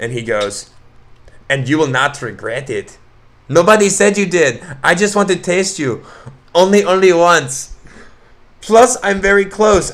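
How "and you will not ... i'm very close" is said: put-on Mexican accent, slow and high-pitched. Reading out a man's text messages to another speaker: mexican accent. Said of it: "reading this in a Mexican accent".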